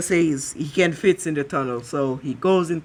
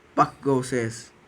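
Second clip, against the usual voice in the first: ordinary talk, nothing marked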